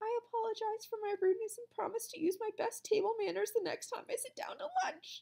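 small, very high, wavering, quavering voice. A kid who shouted earlier reads out an apology, in a small, quavering voice. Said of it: "In a small, quavering voice".

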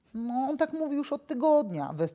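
sighed out, pitched very high. Nikodem, speaking to Kuki and Blubek about Korto, sighing. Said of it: "westchnął Nikodem".

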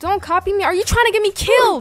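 worked-up, high-pitched screaming. Streamer in a competitive Roblox round yells at another player, screaming. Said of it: "I'm sorry I keep screaming".

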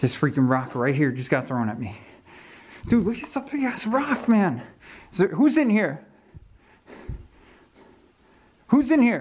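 panting, breathless, freaked-out, high with rising pitch. Speaker in a hallway right after a rock is thrown at them: breathing heavily, freaked out. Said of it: "I'm sorry that I'm breathing heavy".

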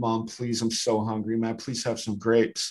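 put-on kid voice, pleading through tears, crying. Retelling a checkout line scene, the speaker quotes a kid begging his mom, imitating a crying kid. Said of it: "the kid's crying now".

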